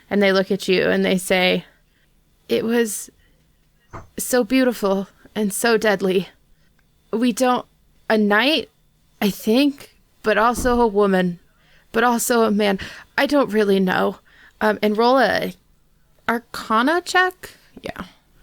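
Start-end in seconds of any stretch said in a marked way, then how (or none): 2.4-14.1 frightened, fearful, terrified voice. Voicing frightened Dragonborn answering a player's question: scared, terrified voice. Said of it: "very scared, very terrified".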